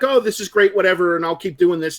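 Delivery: ordinary delivery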